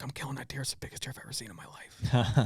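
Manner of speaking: imitated whisper. Retelling his son's words on seeing a buck while hunting: retelling son's whisper. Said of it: "He's like whispering".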